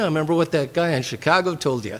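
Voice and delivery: ordinary talk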